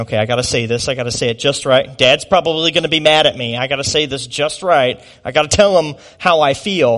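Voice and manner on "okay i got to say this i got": usual speaking voice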